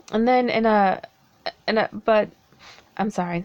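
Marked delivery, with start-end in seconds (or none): 0.1-2.2 stuttering a little, halting and repeating. Speaker talking about the government and apologizing mid-sentence; stuttering. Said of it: "stuttering a little bit".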